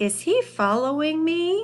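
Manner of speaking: pitch lifts at the end on me. Acting out a question after spotting a snake: rising on 'me'. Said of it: "that voice goes up on a question mark at the end".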